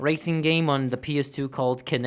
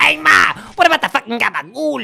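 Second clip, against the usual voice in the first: rough, creaky, very high, loud gremlin screech; 9 semitones higher, 10 dB louder than usual. Retelling a guy in the background asking about gabagool: gremlin-like voice. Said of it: "It's just like a gremlin".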